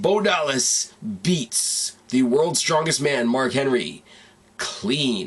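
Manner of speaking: very slow, deliberate, drawn out word by word. Saying a line very slowly because it's awesome, very slow. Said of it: "I'm going to say this very slowly".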